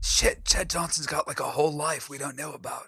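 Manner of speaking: muttered under the breath. Voicing a character muttering to no one: muttering under his breath. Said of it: "under his breath".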